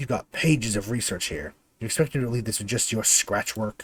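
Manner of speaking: contemptuous, menacing snarl. Narrator voices a woman with a flail at her cowering captive, snarling. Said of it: "She snarls at the cowering figure".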